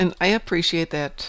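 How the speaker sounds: ordinary delivery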